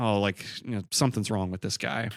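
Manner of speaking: normal talking voice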